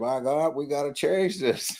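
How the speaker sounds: put-on thick Southern accent. Quoting a man he talked to, mimicking a strong southern accent. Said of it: "with that real deep Southern accent".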